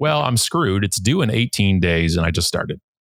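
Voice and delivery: plain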